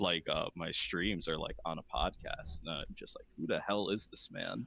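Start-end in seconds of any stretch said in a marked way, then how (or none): none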